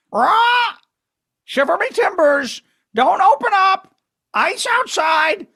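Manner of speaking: very high, squawky bird-like parrot voice. Retelling what a lady said, imitating her parrot-like voice. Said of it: "She sounded like a parrot".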